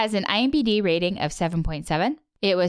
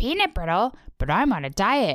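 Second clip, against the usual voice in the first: sing-song cartoon voice, pitch swooping all over. Telling the story of a can of peanut brittle left on the doorstep, in your Ice King accent. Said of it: "my Ice King accent".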